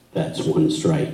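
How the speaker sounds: deep, very low, quiet murmur. Retelling what someone said when the horse acted up, in a low voice. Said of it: "say in a low voice".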